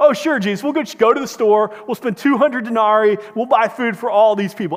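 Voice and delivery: loud, sarcastic, sharply snapped delivery. Retelling how the disciples answered Jesus: imitating a sarcastic snap. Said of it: "they sarcastically just snap back at Jesus".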